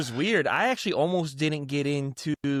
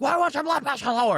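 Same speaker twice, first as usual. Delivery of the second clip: very high, shrill, put-on screaming; 12 semitones higher, 3 dB louder than usual. Retelling how staff screamed at the speaker: imitating someone screaming. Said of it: "they're screaming at me".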